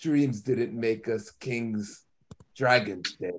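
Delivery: soft, hushed character voice, like a prince. [name] takes his turn after Ali, Daemon Targaryen impression. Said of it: "if I'm going to do as good a Daemon impression as Ali did".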